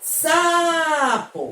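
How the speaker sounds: sa in sapo emphasized and drawn out. Explaining which syllable of sapo is stressed, stressed, drawn-out sa in sapo. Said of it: "eu grito como? ... Eu demorei mais na sílaba sa".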